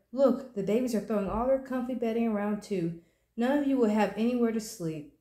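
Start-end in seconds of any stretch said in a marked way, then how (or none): none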